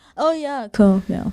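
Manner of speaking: offhand, dismissive, uninterested, can't-be-bothered tone. Showing how a tone can sound demeaning: dismissive tone. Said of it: "It sounds dismissing".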